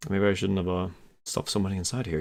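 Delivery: rushed, quick half-whisper under the breath. Game master voicing a character drawing winners, half-whispering to himself. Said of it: "he whispers to himself".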